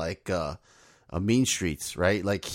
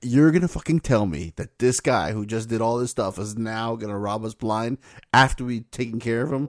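normal talking voice

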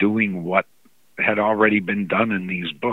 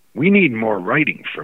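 mock grave, solemn, very serious, sober tone. Retelling a boss's request in his office: very serious, sober tone. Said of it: "very serious, he was very sober and serious".

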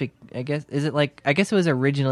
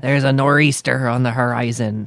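put-on pirate voice, louder; 5 dB louder than usual. Talking about the word nor'easter, a speaker says it like a sailor, pirate voice. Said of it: "I don't know why I'm doing a lot of pirate voices today".

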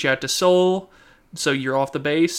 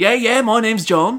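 put-on Australian accent, much higher; 7 semitones higher, 3 dB louder than usual. Explaining a joke, voicing its character in an australian accent. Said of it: "why did you put on the Australian accent?".

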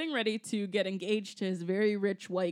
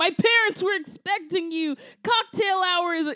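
very high, shrill, very loud, freaking-out meltdown yelling; 10 semitones higher, 8 dB louder than usual. Recounting how Melissa Joan Hart freaked out on a guy, retelling Melissa Joan Hart yelling. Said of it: "she's just yelling like".

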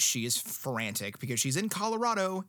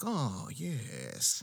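cooing, put-on vampire voice; 4 dB quieter than usual. Showing what a book may mean by cooing to the supplicants, do a vampire voice. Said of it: "doing the vampire voice".

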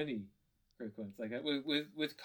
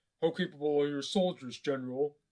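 booming commander's voice, barked out loud; 8 dB louder than usual. Doing quick voices on request: Kylo Ren voice. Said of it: "Kylo Ren".

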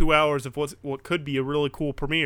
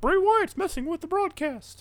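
very high, spooky, put-on announcer voice. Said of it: "And they're like".

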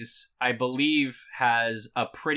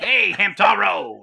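gruff, raspy put-on voice, pitched up, funny accent; 8 semitones higher, 7 dB louder than usual. Imitating a character calling out to Hamtaro, gruff voice with a funny accent. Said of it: "He's got that gruff kind of voice".

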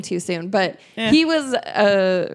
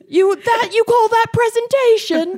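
put-on angry yelling, higher and louder; 6 dB louder than usual. Imitating a man who was screaming over fouls during the game: imitating him screaming mad. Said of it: "we were doing his voice like".

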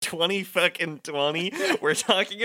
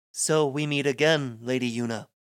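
viscous, slimy, sleazeball voice; 3 semitones lower than usual. Reading a game script aloud as Seymour: Seymour's viscous delivery. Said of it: "as I'm trying to imitate it, it sounds like I'm inflecting too much slimy sleazeball".

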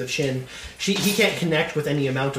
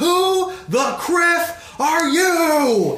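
loud, booming commanding voice, pitched very high; 13 semitones higher, 5 dB louder than usual. Narrating a game scene after a character fires a shot: booming, commanding voice. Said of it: "in a booming, commanding voice".

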